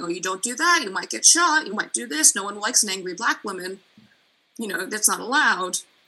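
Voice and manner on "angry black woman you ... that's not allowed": normal talking voice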